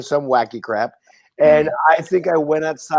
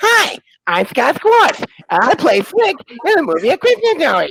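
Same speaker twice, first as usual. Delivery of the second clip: put-on very high-pitched, squeaky New Jersey accent; 11 semitones higher, 4 dB louder than usual. Mimic a statue talking when its button is pushed, in a horrible, squeaky Scott Schwartz voice. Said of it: "horrible, squeaky New Jersey voice comes out".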